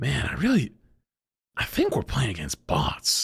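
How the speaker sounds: tired, worn-out, after-shift voice. Retelling what a teammate said in a game, imitating a worn-out guy after work. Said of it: "he sounded like he had just got off his nine-to-five".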